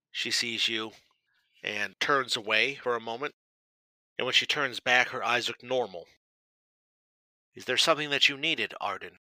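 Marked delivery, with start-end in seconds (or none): 7.5-9.1 icy, cold, distant, unwelcoming tone. Voicing a character who opens her door to a visitor: cold voice. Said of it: "she says with a cold voice".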